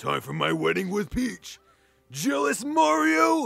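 very loud gruff monster voice. Playing Paper Mario, the speaker voices Bowser speaking to Mario in a Bowser voice. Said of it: "me trying to impersonate somebody's Bowser voice".

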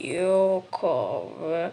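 low, slow, sleepy, stretched-out drawl.

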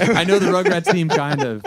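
high, loud laughing call-out, hype host style. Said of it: "I was like".

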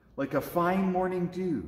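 plain

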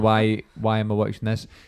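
ordinary talk

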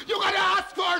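shouted voice.

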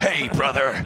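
very loud bellowed holler at full blast. Joking about adopting a famous catchphrase: Hulk Hogan voice. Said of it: "I'm thinking about doing the Hulk Hogan thing".

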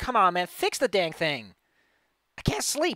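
loud, slow, swooping, drawn-out, stretched yelling. Speaker imagines someone yelling at the windmill owner, yelling. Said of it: "yelling at him".

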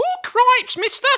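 very high, very loud tavern-wench shriek. Teasing Steve about his accents, doing his tavern wench voice. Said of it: "It can't be any worse than your tavern wench".

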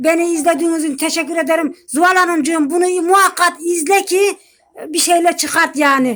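irritated, angry, fuming, still riled-up tone. Closing a video by thanking viewers and addressing a woman, really angry. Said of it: "O yüzden acayip sinirliyim".

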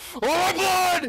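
high, loud, desperate yelling.

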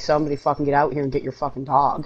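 ordinary delivery

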